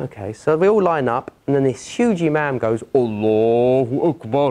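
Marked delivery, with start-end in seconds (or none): 2.9-4.5 put-on very deep voice, much lower. Retelling how the imam began the prayer, imitating a very deep voice. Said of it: "He's got the deepest voice you've ever seen".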